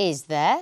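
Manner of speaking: interested tone, tune climbing on "there". Showing interest with a short question: rising intonation on there. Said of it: "The intonation rises at the end of the question".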